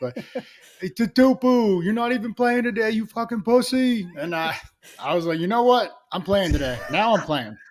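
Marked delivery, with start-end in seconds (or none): 0.8-4.1 put-on rough Philadelphia accent, pitched up. Retelling a fan heckling him from the stands, in a rough Philly accent. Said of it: "in the most rough Philly accent".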